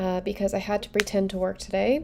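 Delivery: whispered, sarcastic aside.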